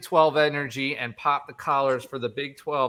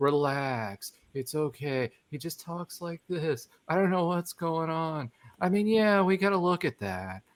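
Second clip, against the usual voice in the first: low-key, unemotional, unbothered coach voice, no fuss; 2 semitones higher, 5 dB quieter than usual. Retelling a coach's press conference in his completely monotone voice: imitating Aranda's monotone voice. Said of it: "completely monotone".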